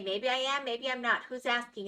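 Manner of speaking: put-on New Jersey accent. Replying to a remark about Dwagon's commute, in a New Jersey soprano accent. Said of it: "in a New Jersey soprano accent".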